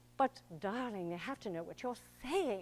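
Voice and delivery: slight put-on British accent. Explaining how actors shape lines for audiences in rehearsal: slight british accent. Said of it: "a slight British tilt to it".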